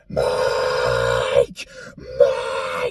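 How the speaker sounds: acted deep, very low scream. Speaker describing a scene where William Afton screams for Mike; imitating William Afton screaming. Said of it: "you can hear William Afton like screaming like".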